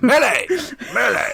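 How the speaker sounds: very high, squeaky put-on man's voice. Doing an impression of Millie's dad calling her name: imitating Millie's dad. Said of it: "I do an impression of Millie's dad".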